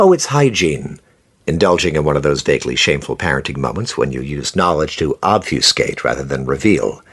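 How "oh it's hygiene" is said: bright, confident, self-assured, pitched-up tone. Retelling a parent's answer to the children's question: imitating Leslie's bright, confident tone. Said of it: "responded in a bright and confident tone of voice".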